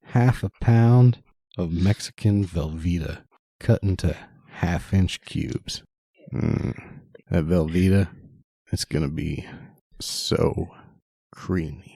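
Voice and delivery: overly sexual creepy voice. Reading a cheesy taco recipe aloud to Dan, in an overly sexual, creepy way. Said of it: "read it in an overly sexual, creepy vibe".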